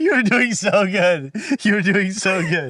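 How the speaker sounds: words spilling through giggles, very high. Praising the other speaker mid-conversation, laughing while talking. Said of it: "Why are you laughing?".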